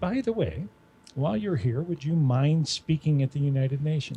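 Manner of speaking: plain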